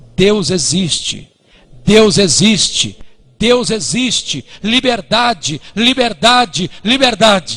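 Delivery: put-on crowd crying out at the top of their lungs. Retelling a crowd of thousands crying out in the capital: retelling a crowd crying out loudly. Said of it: "clamando a plenos pulmões".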